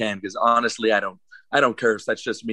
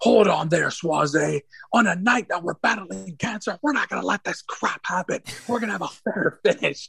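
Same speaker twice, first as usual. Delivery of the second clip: mock fervent, passionate announcer voice, very high-pitched; 9 semitones higher than usual. Retelling the announcer's promo stopping the cheating win: imitating a passionate announcer. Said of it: "he went very passionate in this".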